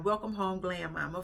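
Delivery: ordinary delivery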